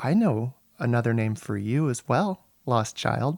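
low character whisper. A game narrator voices Emma leaning in to whisper to Angela; Emma whispering. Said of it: "leans in and whispers into your ear".

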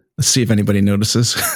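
usual speaking voice

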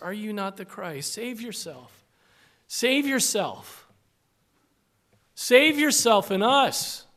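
mocking, scornful, jeering taunt. Speaker acting out the first dying man's taunt at Jesus: imitating a mocking tone. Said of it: "The tone of the first man was no doubt like the mocking crowds".

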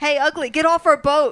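high, very loud, taunting scream. A player's character looks up at a man on their boat, screaming. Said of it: "I'm going to scream".

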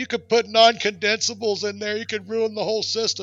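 play-acted, high, angry boss yelling hard. Retelling how the boss yelled at a helper: imitating boss yelling. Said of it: "he yelled at me so hard".

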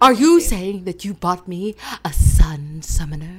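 grand, loud, over-the-top stagey, dramatic delivery. Told to say the line with more essence, delivering it again: dramatic theatrical delivery. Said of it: "You have to say it with more essence".

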